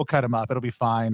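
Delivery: ordinary talk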